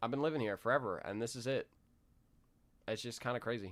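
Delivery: soft, emotional, choked-up voice. Twenty-one-year-old talking about leaving the place they've lived forever, choked up. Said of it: "I'm getting choked up".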